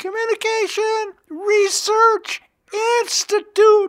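pushed-up, very high falsetto. Recalling how he ended each session saying the institute's name, in falsetto voice. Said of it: "I would say in falsetto voice".

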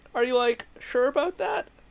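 very high, cartoonish voice, pitched way up. Retelling Shaggy chiming in with some logic about Doomsday, in a Shaggy voice. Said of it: "you do the voice pretty well".

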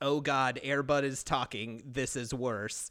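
plain

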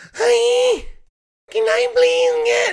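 put-on very high, screechy, piercing voice. Imitating a partner's sudden voice when ordering, very high screechy voice. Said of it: "her voice goes into a decibel that only a dog could hear, like screeches".

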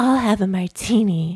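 put-on mousy woman voice. Retelling a scene from a show, ordering a martini: Renee Zellweger impression. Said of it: "You do a really good Renee Zellweger impression".

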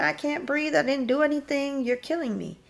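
very high-pitched screaming. Retelling what a young man held on the ground screamed: retelling a scream. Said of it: "and he's screaming".

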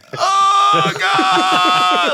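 mock very high, very loud, shrill freaking-out cry. Retelling hearing a stranger in a bathroom stall: imitating a man freaking out. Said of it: "just freaking out, like, losing his mind".

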